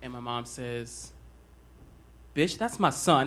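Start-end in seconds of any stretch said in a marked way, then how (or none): none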